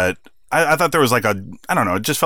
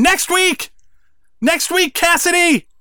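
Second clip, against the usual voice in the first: slow, drawn-out screaming, very high pitch; 3 dB louder than usual. Retelling an outburst after the match: imitating Jericho screaming. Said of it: "And he's screaming".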